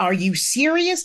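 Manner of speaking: indignant, disbelieving, outraged screaming outburst. Retelling past self reacting to a news story on the radio: retelling screaming at the radio. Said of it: "So I'm screaming at the radio at the injustice".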